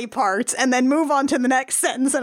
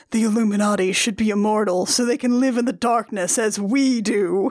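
mock murmured delivery, lower pitched; 4 semitones lower than usual. Recapping a scene, quoting a character who sits down: imitating a murmur. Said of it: "sits in a chair and murmurs".

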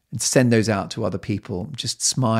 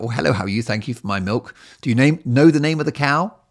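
put-on jolly, cheerful chatter; 4 semitones higher, 4 dB louder than usual. Retelling banter with someone while feeling down; acting out jolly chatter. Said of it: "I become more jolly when I'm depressed".

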